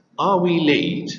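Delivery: pitch rising on "late". English intonation lesson on a yes-no question, rising intonation on late. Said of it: "it's yes no question and it's rising intonation".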